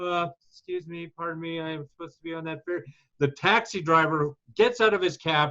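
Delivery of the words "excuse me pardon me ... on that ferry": put-on courteous, polite Canadian accent. Retelling own words at the ferry station: imitating own polite canadian manner. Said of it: "as a polite Canadian".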